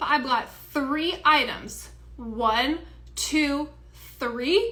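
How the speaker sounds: deliberate, spelled-out, loud, very slow, condescending. A dollar-store customer explaining their three items, speaking real slow. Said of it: "I'm gonna speak real slow so you understand".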